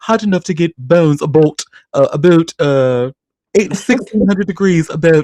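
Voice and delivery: put-on high-pitched, strongly leaned-into Canadian accent. Imitating how Ashley Banfield says a line: Ashley Banfield Canadian accent. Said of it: "one thing I love about Canadians".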